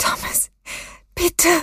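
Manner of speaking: fearful, anxious pleading cry. A mother begs her son Thomas as he steps toward his father, anxious pleading. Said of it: "Flehte seine Mutter ängstlich".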